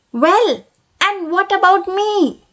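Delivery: tiny, little, high, squeaking voice. Reading a story aloud, the broom suddenly speaks: little high squeaky voice. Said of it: "in a little high, squeaky voice".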